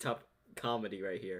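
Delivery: ordinary delivery, nothing marked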